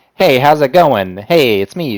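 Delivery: old-timey twenties-style early cartoon character voice. Showing what their own voice is like, a 1920s cartoon character voice. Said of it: "my voice is more like a twenties cartoon character".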